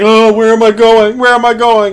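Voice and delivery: lost, stumbling, bewildered delivery. Describing a game character stumbling around lost: imitating Squall stumbling around. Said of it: "He's like".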